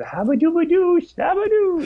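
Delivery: very high, playful nonsense noises. Showing the voice once done with a friend in school hallways: Adam Sandler voice. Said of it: "we would always do Adam Sandler voice".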